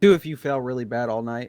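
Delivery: ordinary delivery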